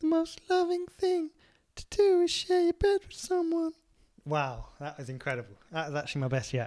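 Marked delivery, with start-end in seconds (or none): 0.0-3.7 very high put-on imitated voice. Announcing he is doing the voice from 86: put-on imitated voice. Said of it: "I'm doing the voice from 86".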